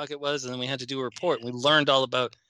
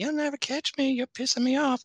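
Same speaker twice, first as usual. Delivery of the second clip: put-on whistling S sounds, higher; 12 semitones higher than usual. Describing a Family Guy character while doing his voice: Family Guy whistling-S voice. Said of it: "always talking like this with the big whistles".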